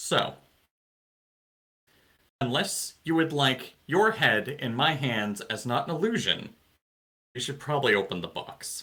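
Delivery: very quiet, hushed, menacing tone. A player, as their character seated on the floor, delivers a very quiet threat. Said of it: "and like very quietly says".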